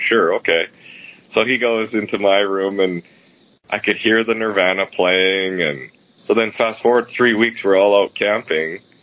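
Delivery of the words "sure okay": put-on unimpressed, reluctant, eye-rolling delivery. Retelling how someone answered an offer: imitating an unimpressed eye-roll reply. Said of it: "rolling her eyes, going".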